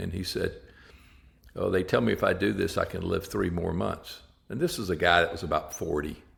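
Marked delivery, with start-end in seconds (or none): 1.5-4.2 mock emotionless, flat, plain, matter-of-fact tone. Retelling what a patient told him about his prognosis: imitating a matter-of-fact tone. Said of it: "he's saying this very matter of fact".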